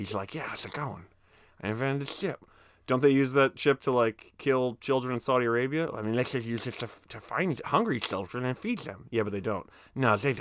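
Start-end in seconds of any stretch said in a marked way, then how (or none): 0.3-2.5 character voice of a talking pet cat. Voicing a cat as a tech billionaire: voice of the cat Jericho. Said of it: "that's the voice of, of, of Jericho".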